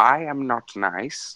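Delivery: played as cartoon villain. Jericho signs a reply back to the Doctor, in Skeletor's voice. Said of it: "somehow in Skeletor's voice".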